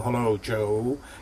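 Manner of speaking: very deep radio-style voice. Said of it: "he very deep voice. It was almost like a radio voice".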